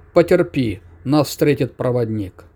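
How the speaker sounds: ordinary delivery, nothing marked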